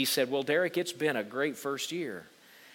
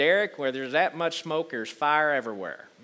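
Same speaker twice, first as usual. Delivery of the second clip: put-on Tennessee accent; 3 dB louder than usual. Quoting what a man he respected told him, in that man's Tennessee accent. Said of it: "He said it in his Tennessee accent".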